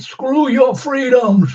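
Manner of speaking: loud, very high movie-star voice, pitched way up. Joking that she could have acted like Arnold Schwarzenegger: Arnold Schwarzenegger voice. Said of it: "pull a Arnold Schwarzenegger and say".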